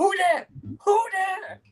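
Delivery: put-on very high, slow, startled, frightened cry. Describing a favorite movie scene, quoting the actress when she gets scared: mock-scared. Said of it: "she gets all scared. She's like".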